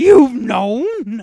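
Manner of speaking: very loud, high-pitched blurt, yelled out. Retelling a movie ending as the heroine turns into Brian Posehn: Brian Posehn voice. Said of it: "she turns into Brian Posehn".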